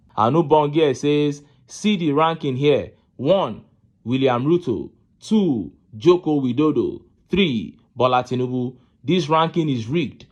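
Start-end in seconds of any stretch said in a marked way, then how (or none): none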